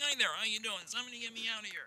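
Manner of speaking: very high, very soft, hushed, boxed-in little voice. Retelling discovering a voice while experimenting: little boxed-in voice. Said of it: "there was this little voice".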